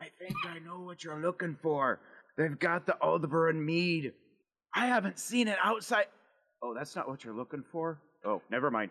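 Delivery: clumsy, failed stage whisper, hushed half-whisper. Narrator voices Grimnir, a huge man who crouches down, trying to half-whisper. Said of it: "He crouches down to kind of whisper".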